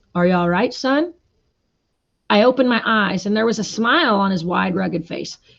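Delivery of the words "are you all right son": deep, kind, friendly voice, lower pitched. Reading a story aloud, the Marshal asking a fallen boy: deep, friendly voice. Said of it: "His deep, friendly voice said".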